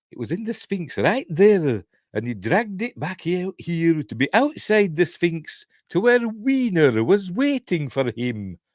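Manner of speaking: put-on Scottish accent at very high pitch. Speaker retells David explaining where he dragged it, Scottish accent. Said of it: "That's my Scottish accent".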